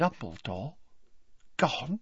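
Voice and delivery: soft, hushed, breathy whisper under the breath. Reading a novel aloud, voicing a character's short question: whispered. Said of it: "whispered Mr. Weasley".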